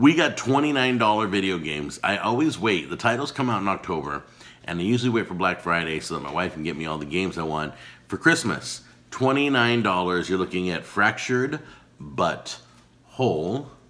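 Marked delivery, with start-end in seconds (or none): 10.3-13.7 very slow, every word drawn out separately. A speaker listing $29 video game titles, naming one very slowly. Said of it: "I have to say that so slow".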